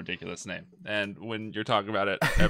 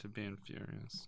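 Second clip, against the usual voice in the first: sad, wistful, melancholy, much quieter; 18 dB quieter than usual. Discussing a racing movie with others, saying it melancholy. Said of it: "The way you said furious was very melancholy".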